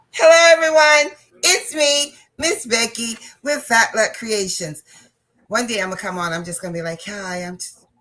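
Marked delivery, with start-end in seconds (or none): 7.0-7.6 very quiet, hushed, subdued, low-key. Joking about one day greeting the stream differently: mock quiet, not loud. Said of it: "I'm not gonna even be loud".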